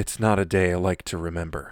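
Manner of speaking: low, grave, deadly serious tone. Acting out Jack DeSena flipping from his cartoon, mock-serious Jack DeSena impression. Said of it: "You really nailed the Seriousness of the tone".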